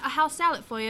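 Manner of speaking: all-out, full-on fake British accent. Speaker retells serving tables at work, in a put-on British accent. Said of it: "I was breaking out in British accents".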